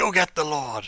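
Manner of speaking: high loud shout. Narrator voicing someone outside the banged door, shout. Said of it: "And you hear a shout".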